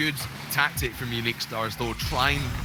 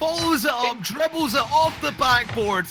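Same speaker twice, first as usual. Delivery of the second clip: very high, very loud, excited Scottish roar. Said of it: "when [name] goes full Scottish".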